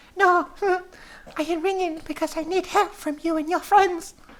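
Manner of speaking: very high-pitched put-on woman's voice. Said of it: "this voice has gone now".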